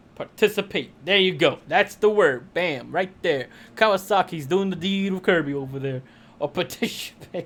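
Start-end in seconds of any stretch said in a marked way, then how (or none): 6.4-7.5 breathy, whispered put-on character voice. Saying one word as an impression: Sean Connery voice. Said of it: "that was my Sean Connery imp-".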